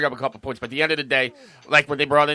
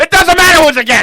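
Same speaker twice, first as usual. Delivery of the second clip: heated, shrill, very loud, high-pitched screaming; 13 dB louder than usual. In a group argument, screaming at the others. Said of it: "Why are you screaming?".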